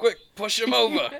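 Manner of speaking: urgent, very high-pitched shout. Playing a character kneeling behind someone, yelling to Tim: yelling in character. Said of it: "yell at Tim".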